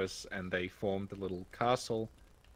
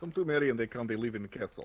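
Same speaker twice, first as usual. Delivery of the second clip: put-on Russian accent; 2 semitones higher than usual. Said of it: "we're just speaking with Russian accents".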